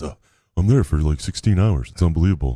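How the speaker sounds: mocking, snobby, smug put-on voice. Mocking the other speaker bragging about grinding on Saturdays: mocking imitation of a privileged prick. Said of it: "Telling people how you grind on Saturdays".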